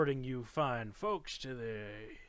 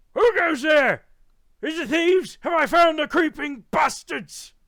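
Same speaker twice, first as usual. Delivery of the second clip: shrill, booming, very high, very loud yelling; 16 dB louder than usual. A storyteller voicing a dragonborn rising from a snow pile: yelling in character. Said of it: "starts yelling".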